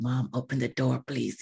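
muttered under breath. Retelling pretending to call to her mom in front of friends, under the breath. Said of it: "pretending under my breath".

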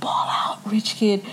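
hushed, unvoiced, gossipy whisper.

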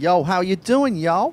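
very loud, high-pitched, put-on Bronx accent. Answering a caller's request to say a greeting: put-on bronx accent. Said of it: "I wanna hear him say".

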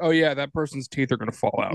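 normal talking voice

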